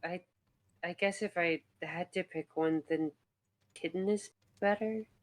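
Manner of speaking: very hushed, soft voice, under the breath. Voicing a character who answers after a pause, blushing: very hushed voice. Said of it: "in a very hushed voice".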